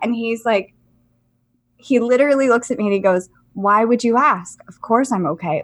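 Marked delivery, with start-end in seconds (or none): 3.5-5.6 put-on eerily calm, slightly crazy voice. Retelling a man's answer when asked if he is okay, imitating a crazy calm voice. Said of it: "Like in a crazy calm voice".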